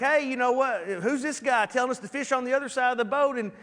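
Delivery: ordinary talk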